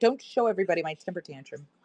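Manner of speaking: fussy, complaining dog voice. Speaking for the whining dog who wants the couch: voicing the dog. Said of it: "she's like".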